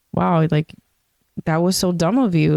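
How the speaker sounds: ordinary talk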